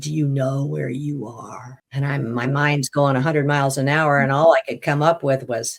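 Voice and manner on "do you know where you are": horrible, monstrous demonic voice. Retelling a voice that spoke to him out of the fog, in a horrible demonic voice. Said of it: "this horrible demonic voice said".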